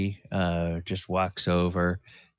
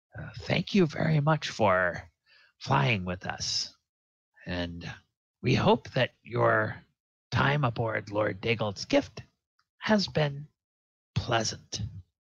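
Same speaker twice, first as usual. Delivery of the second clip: slow, gracious, courteous ship captain voice; 4 semitones higher than usual. The narrator voices the ship's captain addressing the passengers: ship captain character voice. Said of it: "And then she turns to the rest of you and she says, / and then the captain comes up uh".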